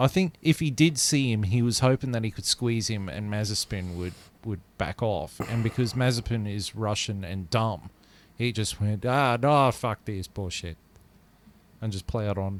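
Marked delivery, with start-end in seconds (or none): 9.1-10.8 poorly done put-on Finnish accent. Imitating a driver who plowed on: Kimi Räikkönen accent. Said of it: "That sounded like Kimi Räikkönen".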